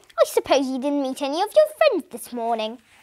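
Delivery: ordinary delivery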